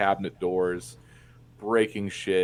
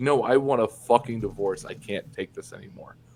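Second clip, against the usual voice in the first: tearful, sobbing crying through the words; 2 semitones higher than usual. Speaker retells what their crying dad said to them; imitating dad crying. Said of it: "All while he's crying".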